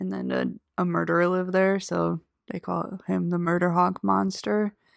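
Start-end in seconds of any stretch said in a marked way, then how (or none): none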